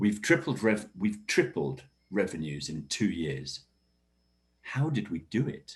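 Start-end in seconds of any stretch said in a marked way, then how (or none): 4.6-5.8 rising intonation, climbing on do it. Teaching question intonation with an example about revenues: rising pitch on 'do it'. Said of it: "So the intonation's going up um, there as the second part".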